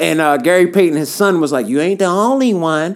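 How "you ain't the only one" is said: Oakland way of talking. Retelling what a son told his father: imitating an Oakland accent. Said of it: "he said it in that Oakland accent".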